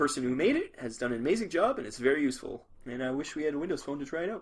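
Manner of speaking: usual speaking voice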